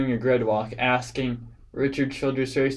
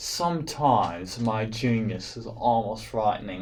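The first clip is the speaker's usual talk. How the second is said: soft, put-on Australian accent; 3 semitones lower, 5 dB quieter than usual. Handing out a Genius of the Year award, the speaker jokes in an Australian accent. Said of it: "I did that in an Australian accent".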